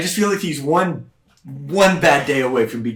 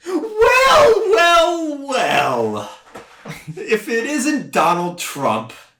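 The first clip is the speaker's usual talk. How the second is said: very high, swooping, slow drawl, each "well" stretched; 14 semitones higher than usual. Imagining a speech at the RNC, Grace Randolph impression. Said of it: "that's my impression of Grace Randolph".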